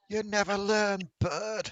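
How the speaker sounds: very high shout laced with cackling. Voicing a character who cackles and shouts at a bird: cackling shout. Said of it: "a cackle and just shouts".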